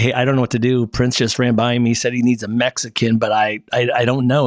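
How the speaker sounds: normal talking voice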